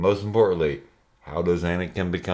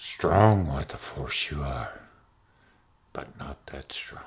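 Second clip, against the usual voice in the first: deep put-on creature voice, artificially pushed down; 5 semitones lower, 4 dB quieter than usual. Showing the others your own take on the character, do a Yoda impression in a deepened voice. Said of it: "here's my Yoda".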